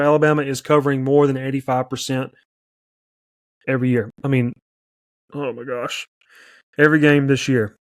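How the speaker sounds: rushed, rattled-off, way too fast. Giving a pick on the alabama game, talking too fast. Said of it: "I'm talking too fast".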